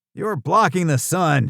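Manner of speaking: high, cantankerous, cranky, crotchety holler. Narrator facing two big men trying to intimidate him, shouting in a crotchety voice. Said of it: "I shouted in my best crotchety voice".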